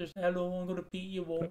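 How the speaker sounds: quiet, soft put-on Birmingham accent. Speaker imagines a wrestler cutting a promo, Birmingham accent. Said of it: "in like that accent".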